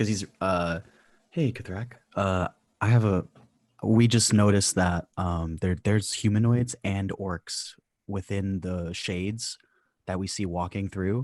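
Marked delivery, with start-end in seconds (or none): 1.3-11.2 whispering in character, lower. Whispering a plan to a companion in a game scene: whispering in character. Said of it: "I'm gonna whisper this to Kithrak".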